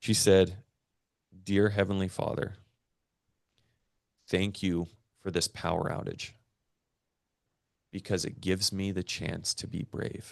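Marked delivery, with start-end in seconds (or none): 1.4-10.3 choking up, holding back tears, quieter. Retelling a five-year-old daughter's prayer, holding back tears. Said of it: "I'm gonna try not to cry".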